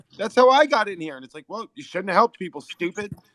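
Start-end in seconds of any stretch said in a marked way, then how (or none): 1.5-3.2 put-on yelling. Retelling what people yelled down into the pit: imitating people yelling. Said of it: "people yelled it at me".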